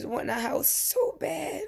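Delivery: tearful, breaking voice. Speaker recalling living with parents and five kids, crying while talking. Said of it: "excuse me for crying".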